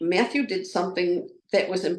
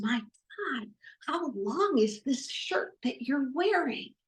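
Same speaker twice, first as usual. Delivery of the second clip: close, high, hushed half-whisper; 7 semitones higher, 5 dB quieter than usual. Retelling what someone half-whispered in their ear at a play: imitating a half-whisper. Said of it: "he leans right in close and he whispers".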